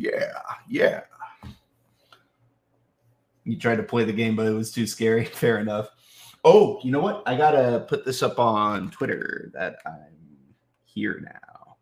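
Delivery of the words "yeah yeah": excited, high, whispered yeah yeah. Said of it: "him standing up and going".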